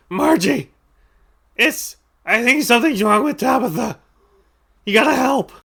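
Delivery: very high, squawking crow-like bird voice. Voicing a crow who asks for help: squawking crow voice. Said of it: "he squawks and says".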